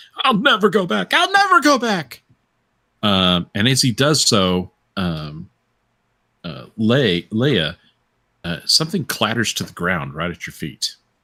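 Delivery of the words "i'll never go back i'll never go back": shrieking scream at a very high pitch. Game narrator voices Calvin bolting into the crowd, screaming. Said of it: "he starts screaming".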